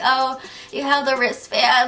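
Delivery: acted tipsy speech, words slurred together. Retelling how a buyer sounded when meeting her: imitating drunk slurring. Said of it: "slurring her words".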